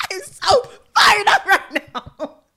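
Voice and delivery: high, loud, fired-up excited squeal.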